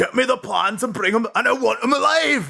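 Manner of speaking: put-on very high-pitched Scottish accent. Imitating an actor's original line read through the mask: David Prowse Scottish accent impression. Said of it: "his fucking Scottish accent".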